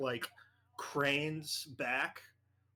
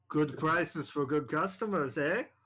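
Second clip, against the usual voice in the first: put-on grinning character voice; 2 semitones higher, 4 dB louder than usual. Narrating to the group, voicing the voice they recognize; grinning Silas Naquani voice. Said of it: "her face turns into a grin".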